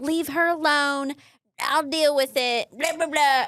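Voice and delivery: acted brusque, impatient, dismissive, exasperated tone. Retelling how Cole answered a warning about the bathtub: imitating someone yelling. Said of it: "Cole's yelling at me like".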